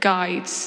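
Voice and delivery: the word guides set apart and stressed.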